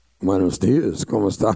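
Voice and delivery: put-on deep, big, booming, resounding heavenly voice. In a joke, a voice greets two dead preachers at the pearly gates, booming. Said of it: "a booming voice cried out and said".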